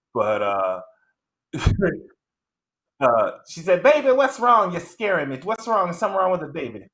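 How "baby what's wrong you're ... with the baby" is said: very high, over-the-top, exaggerated mom voice. Speaker retells the mother's reaction to news about the baby, exaggerated mock mom voice. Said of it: "I'm totally shitting on her voice".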